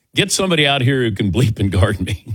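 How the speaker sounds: ordinary talk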